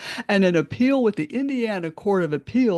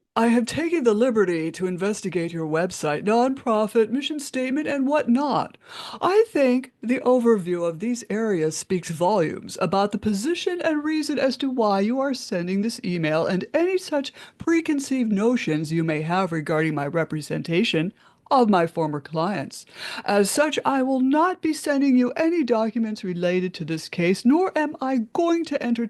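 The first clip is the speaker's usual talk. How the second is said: ordinary talk, nothing marked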